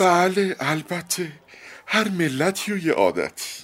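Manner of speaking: sentimental, emotional tone, pitched very high. A barber, trying to appear calm, replies to an angry man; emotional tone. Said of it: "با لحنی احساساتی گفت".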